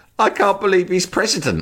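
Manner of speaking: very high, tearful, sobbing crying voice. Retelling what a crying young man in a pub said: imitating someone crying. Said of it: "he was fucking crying his eyes out".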